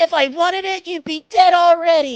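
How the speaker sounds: put-on dumb voice, shrill, very high and loud. Showing how you mess with Chris about a movie, do a put-on stupid voice. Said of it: "I always just make like a stupid voice".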